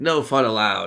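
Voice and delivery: loud, sarcastic, mocking and dismissive tone. Retelling what the dm said to a player: imitating a sarcastic remark. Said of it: "sarcastically, he's like".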